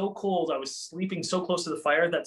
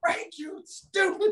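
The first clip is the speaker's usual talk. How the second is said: mock half-voiced mild yell, very high; 14 semitones higher than usual. Retelling yanking a tree branch at 3 a.m., retelling yelling at a branch. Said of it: "I'm like yelling at 3 o'clock in the morning".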